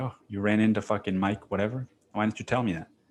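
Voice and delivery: suddenly alarmed, frightened, scared tone. Retelling a movie scene, acting out a character's reply: imitating a scared reaction. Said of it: "all of a sudden he's scared".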